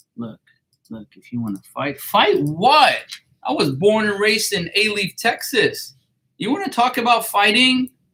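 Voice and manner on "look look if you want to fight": very hushed, very quiet, dropped-down low voice. Retelling what an adjuster said, imitating a lowered voice. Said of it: "lowered his voice and he was like".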